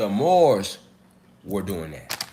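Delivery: slow, low, deliberate, drawn out word by word. Speaker repeats a point so listeners can keep up, talking slowly. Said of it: "I'm gonna talk slow".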